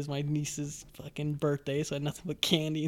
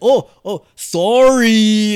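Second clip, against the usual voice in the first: put-on overdone Canadian accent, very loud and high; 6 semitones higher, 20 dB louder than usual. Retelling how characters mocked the way Canadians say sorry: imitating an exaggerated Canadian sorry. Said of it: "making fun of the way we say sorry".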